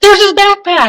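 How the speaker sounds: excited, high-pitched calling out.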